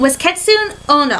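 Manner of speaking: plain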